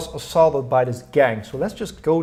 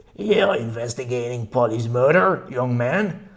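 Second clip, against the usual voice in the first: hoarse, scratchy whispered voice; 2 semitones lower than usual. A woman grabs a young man's arm as he leaves the pub, scratchy alcohol-burned whisper. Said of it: "With her scratchy voice, burned by alcohol, she whispers".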